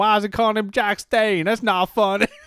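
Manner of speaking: put-on North Carolina accent. Imitating some American confused by a pun name, in a put-on North Carolina accent. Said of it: "What the hell was that accent supposed to be?".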